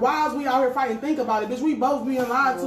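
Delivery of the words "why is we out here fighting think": plain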